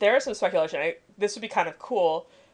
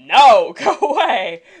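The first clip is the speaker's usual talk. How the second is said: very loud outburst yelled at full volume; 3 semitones higher, 10 dB louder than usual. Retelling a reaction to an episode's ending: imitating own shout. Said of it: "To which I just shouted".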